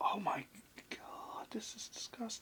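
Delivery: soft, hushed, disgusted whisper.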